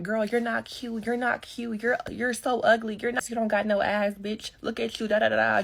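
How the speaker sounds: aggressive, taunting, trash-talking put-down tone. Retelling a girl in a store mocking the speaker: imitating someone popping off. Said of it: "just popping it".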